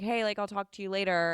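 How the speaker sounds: normal talking voice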